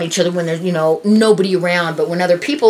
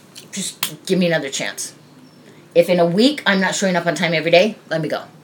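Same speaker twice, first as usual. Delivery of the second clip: ordinary talk, nothing marked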